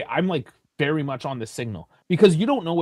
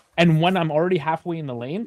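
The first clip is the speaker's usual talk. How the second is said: ordinary talk, nothing marked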